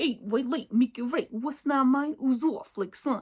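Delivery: playful, put-on Brooklyn accent. Showing listeners how to say a saying in a funny voice, brooklyn accent. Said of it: "Like I love the Brooklyn".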